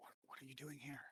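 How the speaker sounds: hushed whisper in a character voice. Voicing a character who pulls others aside and asks: character whispering. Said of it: "And he's whispering".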